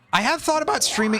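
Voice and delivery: voice cracking. Player commenting on a card game, voice cracking. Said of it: "voice crack there".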